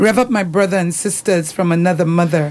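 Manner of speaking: ordinary delivery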